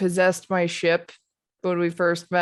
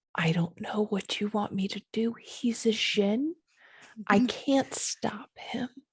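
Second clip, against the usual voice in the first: very quiet, breathy, barely voiced hushed whisper; 3 semitones higher, 7 dB quieter than usual. Speaking in character, saying they can't stop a jin: said very quietly. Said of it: "very quietly say".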